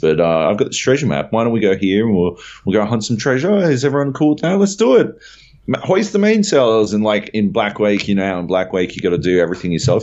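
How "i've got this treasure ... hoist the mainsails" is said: cheerful, friendly put-on German accent, sing-song. Retelling what the captain says while sailing around, friendly German accent. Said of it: "He's saying this all in a really friendly German voice".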